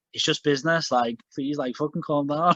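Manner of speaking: ordinary delivery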